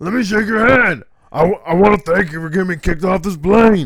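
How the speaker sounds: shrill shout, very high and very loud. Imitating a man who got kicked off a plane, impression of the shake my hand guy. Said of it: "I did a great impression of that guy".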